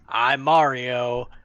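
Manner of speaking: flat, acted performer voice. Mocking a trailer line as it sounds in the trailer: imitating Chris Pratt's Mario. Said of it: "the trailer comes out and he's like".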